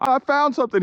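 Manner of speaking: put-on thrilled excitement, very high-pitched, excited call. Retelling how he called out after finding the spot: imitating an excited voice. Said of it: "He was really excited".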